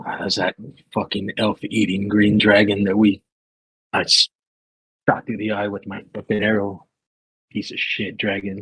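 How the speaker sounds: hushed half-whisper, in character. Voicing a character who walks up and answers in someone's ear: half-whispering in character. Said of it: "walk up to him and whisper".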